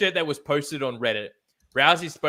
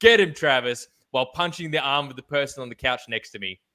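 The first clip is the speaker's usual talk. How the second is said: plain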